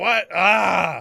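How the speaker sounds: rough, gruff exclamation. Game master voicing someone calling out from below, with a gruff exclamation. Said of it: "like a gruff".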